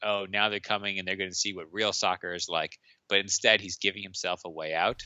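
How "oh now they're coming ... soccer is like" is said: usual speaking voice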